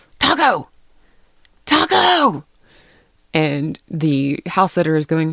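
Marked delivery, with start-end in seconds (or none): 0.2-2.4 very high, loud, swooping yelling. Telling a story about a lost dog named Taco, imitating Pete screaming. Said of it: "Pete is screaming out the window".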